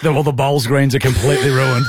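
plain

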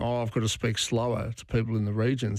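plain

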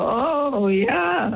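put-on French-sounding accent on oh yeah. Retelling answering someone who spoke French, pouting: put-on French accent. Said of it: "pout my mouth in, in a French sort of a thing".

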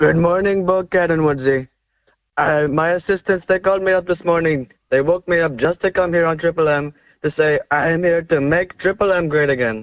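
put-on Indian accent. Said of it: "Is that an Indian Trump?".

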